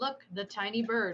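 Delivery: dry sarcastic tone. Pointing at a giant bird in character: sarcastic in character. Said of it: "It was my attempt at sarcasm".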